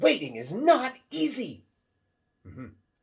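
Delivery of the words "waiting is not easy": very loud, very high, swooping excited exclamation. Rereading the title with an exclamation point in the voice. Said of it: "with an exclamation point in my voice".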